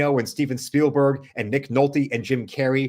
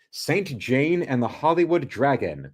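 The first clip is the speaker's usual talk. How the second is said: ordinary delivery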